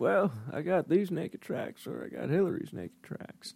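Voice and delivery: put-on whispered, weird-sounding Southern accent voice. Joking about Clinton watching a show, in a weird Southern Clinton voice. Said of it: "weird Southern Clinton".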